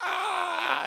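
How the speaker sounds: mock scream, a high, loud yelp.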